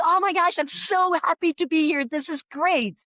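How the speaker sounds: put-on high, gushing, enthusiastic American-style delivery. Describing a monday morning meeting with an american team, imitating enthusiastic americans. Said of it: "the Americans are like".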